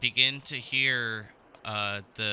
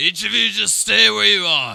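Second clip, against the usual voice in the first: put-on very loud, very high, shrill, rough drunk-sounding bellow; 10 semitones higher, 10 dB louder than usual. Game master voicing a character calling out to the players: Sir Riffin voice, sounding drunk. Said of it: "You sound drunk".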